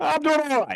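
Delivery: best-effort put-on Cajun Bronx accent, high-pitched. Retelling a phone call, answering as the caller, Ed Poche's Cajun Bronx accent. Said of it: "I'm doing the best Cajun Bronx accent I can here".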